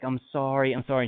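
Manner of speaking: weepy voice, words spoken through tears. Retelling how a neighbor's wife ran out apologizing: imitating someone crying.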